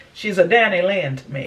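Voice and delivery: ordinary delivery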